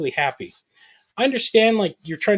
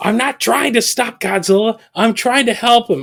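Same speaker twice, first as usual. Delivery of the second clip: put-on scream, pitched higher and louder; 4 semitones higher, 5 dB louder than usual. Retelling a show scene where he screams at Kate: imitating Kurt Russell screaming. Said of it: "when he's screaming at, um, at Kate".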